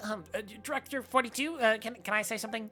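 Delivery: dim-witted, hesitant, stammering stupid lackey voice. Voicing a useless lackey speaking up to the director, stupid voice. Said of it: "I'm just giving him a stupid voice".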